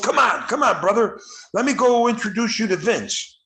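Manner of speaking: mock eager, all-fired-up voice. Retelling a wrestler greeting the speaker on his return home: imitating someone sounding excited. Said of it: "he sounded all excited for me".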